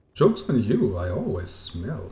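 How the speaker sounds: ordinary talk, nothing marked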